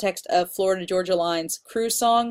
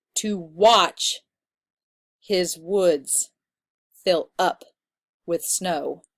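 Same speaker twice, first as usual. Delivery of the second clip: weak-strong beat landing on watch, woods, up, snow. Explaining iambic meter with a poetry line, iambic stress: watch, woods, up, snow. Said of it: "Watch, woods, up, and snow are all stressed when you say it, and that's iambic".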